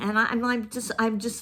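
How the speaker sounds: halting, stuttering, stammering speech. Reviewing a book that displeased them, the speaker stutters. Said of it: "I'm stuttering".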